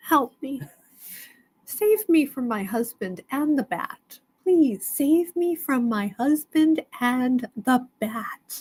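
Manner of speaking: muttering under breath. Asking viewers on the live for rescue, hoping not to be heard: talking under breath. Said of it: "I'm hoping if I talk under my breath".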